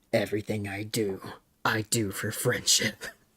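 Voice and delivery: mock hushed, very quiet, intimidating menace. Quoting a line someone said, imitating an intimidating tone. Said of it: "a fucking intimidating tone".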